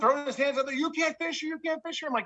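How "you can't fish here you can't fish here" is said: acted out, screamed, repeated yelling. Retelling a confrontation with a dock owner while fishing: imitating a man screaming. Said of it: "Screaming at me, yelling".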